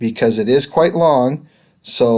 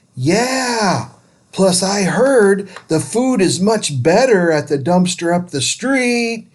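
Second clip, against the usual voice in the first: high, mocking, jeering yell with drawn-out yeah; 7 semitones higher than usual. Reading a story where another boy jeers at a distant old man: mocking yell. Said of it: "one of the other boys yells".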